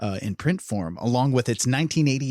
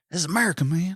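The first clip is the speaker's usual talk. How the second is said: small, teasing, mocking put-on voice; 4 semitones higher than usual. Making fun of Biden in a little voice: Biden impression.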